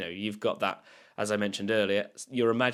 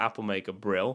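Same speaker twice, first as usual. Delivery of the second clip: ordinary talk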